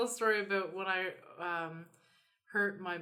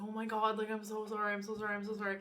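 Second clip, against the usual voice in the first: freaked-out, frantic, flipping out, over and over. Retelling a younger driver after a minor car bump, imitating someone flipping out. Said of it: "she was like literally flipping out".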